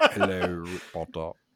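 low, deep put-on character voice. Getting back into character as Snape: Snape voice. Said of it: "get in character".

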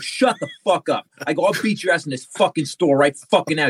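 mock sharp snapping delivery, acted out. Retelling confronting a man yelling at a pharmacist, retelling snapping at someone. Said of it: "And I snapped".

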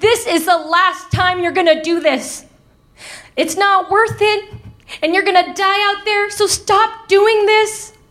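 tearful pleading voice. Retelling grandma's plea to stop running away: imitating grandma crying. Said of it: "my grandma would cry, saying".

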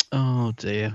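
put-on sheepishness. Retelling a character's reaction after the doctor uses him, mock-sheepish. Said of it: "just sheepishly goes".

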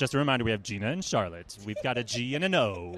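put-on radio announcer delivery. Reminding everyone who is on the interview, put-on radio voice. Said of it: "my radio voice is suddenly turning on".

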